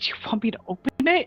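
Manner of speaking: soft, breathy whisper in a put-on voice. Voicing a character who quietly asks a horse whether to open the door: whispering in character. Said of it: "she'll whisper to Midge".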